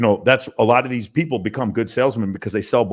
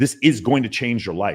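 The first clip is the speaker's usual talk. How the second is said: ordinary talk, nothing marked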